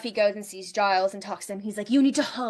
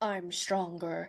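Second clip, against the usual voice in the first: low, soft, deep, inflectionless deadpan villain voice; 3 semitones lower, 8 dB quieter than usual. Recapping a Buffy episode, quoting Luke as he fights Buffy: Luke's deep voice. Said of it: "with his deep voice".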